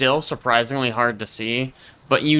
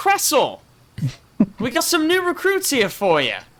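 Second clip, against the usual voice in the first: guard's yell, pitched very high; 13 semitones higher than usual. Voicing a guard calling down from a railing: guard yelling. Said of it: "he kinda comes over to this railing and yells".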